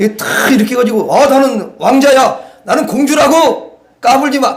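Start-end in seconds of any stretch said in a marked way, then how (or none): 1.3-4.6 proud, regal, swaggering, pitched-up boastful delivery. Acting out walking into church chest out: acting proud with chest puffed out. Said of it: "가슴을 쫙 펴고".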